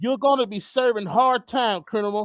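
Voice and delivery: ordinary talk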